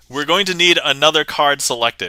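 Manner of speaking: usual speaking voice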